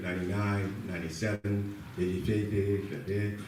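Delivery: sleepy, fading voice.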